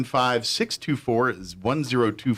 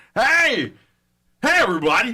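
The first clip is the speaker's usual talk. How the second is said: put-on baseball announcer voice, higher and louder; 11 semitones higher, 6 dB louder than usual. Imitating the announcer voice stuck in their head: Will Ferrell's Harry Caray voice. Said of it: "the Will Ferrell, Harry Carey version in my head".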